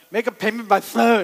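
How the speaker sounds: put-on numb-mouthed speech. Retelling answering an automated phone system while numb with Novocaine; mimicking Novocaine-numbed speech. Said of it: "I'm swollen with Novocaine".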